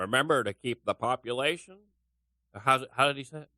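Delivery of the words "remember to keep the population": weird, cartoonish, bad game-show host voice. Asked if they can do a Bob Barker voice, the speaker tries a terrible Bob Barker impression. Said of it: "can you do a Bob Barker voice?".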